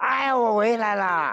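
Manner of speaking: high, slow calling-out voice.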